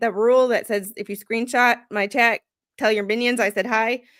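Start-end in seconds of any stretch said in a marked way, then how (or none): none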